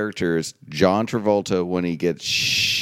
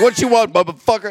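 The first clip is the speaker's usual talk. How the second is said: very high, loud, raised voice; 13 semitones higher, 6 dB louder than usual. Picturing the phone assistant talking back: Samuel L. Jackson voice. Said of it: "change my voice of Siri to Samuel L. Jackson".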